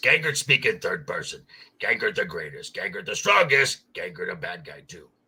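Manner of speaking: deep, loud, booming monster voice with swooping pitch. Describing a capture-and-train monster character, showing how it talks: Gangert voice. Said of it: "Gangert talk like this".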